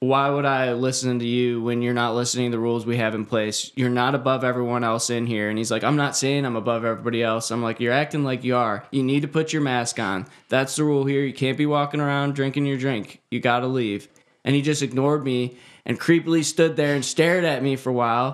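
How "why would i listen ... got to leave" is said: normal talking voice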